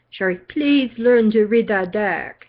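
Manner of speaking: put-on South African accent. Quoting a woman she does readings for, who calls her Sherry: South African voice. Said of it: "in her South African voice".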